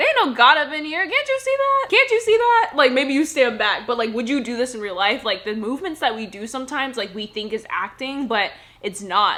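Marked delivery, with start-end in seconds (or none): 0.0-2.7 very high, swooping, over-the-top overplayed comic sass. Showing how the line sounds played up for comedy: played-up comedic sass. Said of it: "you're really playing this up".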